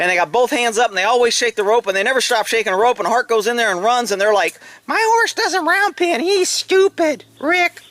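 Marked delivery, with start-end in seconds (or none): 4.9-7.7 put-on high, slow, dim, dopey voice. Quoting horse owners in a put-on stupid voice. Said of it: "that's my stupid voice".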